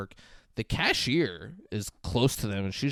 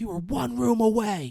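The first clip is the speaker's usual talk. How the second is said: put-on screaming, higher pitch; 11 semitones higher than usual. Retelling a woman throwing bread and screaming: imitating someone screaming. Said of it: "just screaming. She's like".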